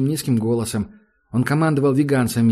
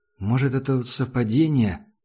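ordinary delivery

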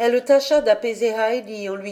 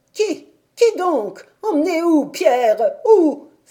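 high, drawn-out cry of fresh anguish; 7 semitones higher, 6 dB louder than usual. The grandmother, told that Heidi was taken away, cries out in anguish. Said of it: "s'écria la grand-mère, saisie d'une nouvelle angoisse".

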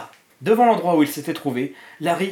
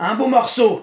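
loud, high-pitched, victorious, triumphant voice; 7 semitones higher, 5 dB louder than usual. The trash can answers the question put to it: triumphant. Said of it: "répondit la poubelle d'une voix triomphante".

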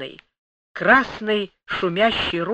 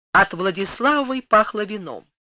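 ordinary delivery

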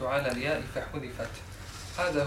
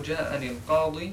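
plain

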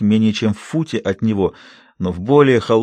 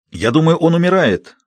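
raised, high-pitched yelling shout; 6 semitones higher than usual. Private Ames cries out about the lad: shouting. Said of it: "закричал рядовой Эймс".

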